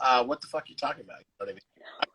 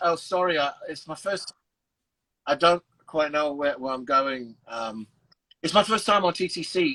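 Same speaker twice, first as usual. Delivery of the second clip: slow put-on British accent. Retelling an expired transfer exchange on the TTC, put-on British accent. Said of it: "I started speaking in a British accent".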